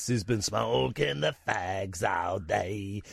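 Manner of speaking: very slow croaky voice. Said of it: "I've got such a croaky voice".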